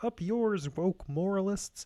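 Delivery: high-pitched cartoon frog puppet voice. Doing a mock author voice, sounding like Kermit the Frog. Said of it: "Why'd you sound like Kermit the Frog?".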